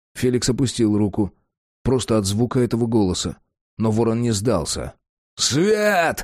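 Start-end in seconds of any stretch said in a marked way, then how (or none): 5.4-6.3 very high-pitched yell, word stretched long. Facing the vampire, Raven refuses to give up and shouts to the others. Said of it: "заорал он".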